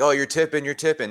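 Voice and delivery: jeering, high-pitched heckling yell. Retelling how the other dugout shouted at the pitcher: imitating opponents yelling. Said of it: "these guys kept yelling".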